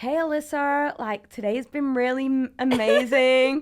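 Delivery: very loud, high, mad put-on American accent. Showing how she and a friend used to play two characters, mad american accent. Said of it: "in like some mad American accent".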